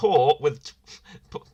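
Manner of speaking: talking while breaking into laughter. Starting to read a one-star review aloud: laughing while talking. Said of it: "I'm laughing already".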